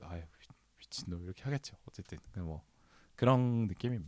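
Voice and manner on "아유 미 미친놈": very soft whispered mutter in a Jeolla voice. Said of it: "지금도 이걸 듣고".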